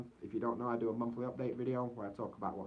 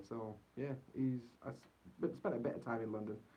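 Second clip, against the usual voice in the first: ordinary delivery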